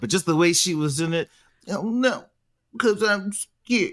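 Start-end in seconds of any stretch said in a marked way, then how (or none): 1.7-3.9 annoying put-on baby voice, high and drawn out. Complaining about the way a woman spoke: imitating Lydia's baby voice. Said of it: "the baby voice".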